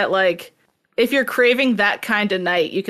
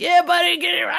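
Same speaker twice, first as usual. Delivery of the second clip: very high-pitched, rowdy cheering yell; 11 semitones higher than usual. Retelling what the crowd at a fiddle bar yells: imitating people yelling. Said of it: "everyone's yelling".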